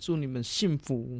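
pretend teary. Podcast host wishing listeners with partners a happy Valentine's Day, mock-tearful. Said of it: "不要哭".

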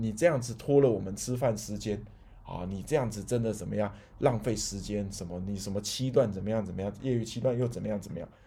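ordinary talk

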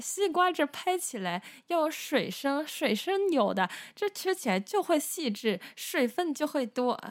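put-on Beijing accent, pitched high. Retelling what an auntie said by the watermelons, in a self-added Beijing accent. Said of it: "这北京腔是我自己加的哦".

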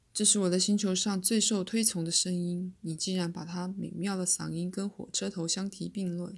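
ordinary delivery, nothing marked

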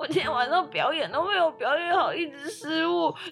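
put-on very high, anxious, nervous, worried fretting. Retelling what the other speaker said after the show: imitating nervous speech. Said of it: "然后很紧张".

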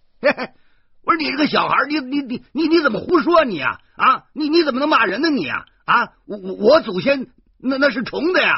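very high, stammering, flustered, embarrassed angry shout. Reading a story aloud, a shamed tourist yells back: shouting in embarrassed anger. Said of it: "他恼羞成怒地叫着说".

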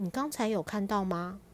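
ordinary delivery

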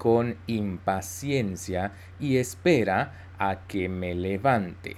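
slow, careful reading in Spanish.

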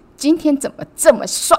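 play-acted, very high, cheeky, playful teasing. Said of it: "这么俏皮，这么大声吗？".

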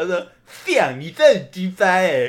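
put-on thick-tongued slurring. Retelling what a man said to them, imitating his thick-tongued slurring. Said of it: "然后他又大舌头".

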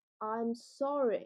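taunting, goading, provocative tone. Showing how an apology with a badly handled tone becomes a provocative apology. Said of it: "口气没拿捏好的话，很容易变成挑衅".

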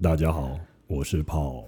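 very deep voice. Introducing oneself to the audience when asked: very deep voice. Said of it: "好低沉的嗓音啊".

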